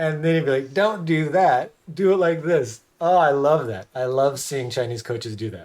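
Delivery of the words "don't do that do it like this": mocking tone, higher and louder. Retelling how wushu coaches taught: imitating a mocking coach. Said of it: "they would just mock you".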